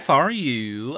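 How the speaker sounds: put-on vague, slow, drawn-out Scandinavian accent.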